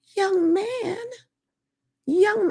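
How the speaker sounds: put-on old Jamaican woman voice. Retelling what an old Jamaican lady said to a young man: imitating an old Jamaican lady. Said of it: "The older lady says".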